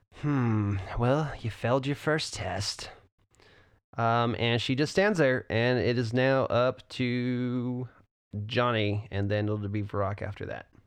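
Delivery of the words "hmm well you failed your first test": said with a smile. Voicing the Inquisitor after she wounds a player: smiling as the Inquisitor. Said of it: "she just smiles and says".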